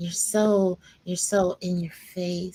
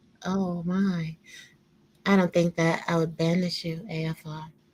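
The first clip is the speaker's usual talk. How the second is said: sultry, alluring, seductive come-hither voice. Speaking to a f r, the speaker addresses them in an alluring voice. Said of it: "What's up with this alluring voice".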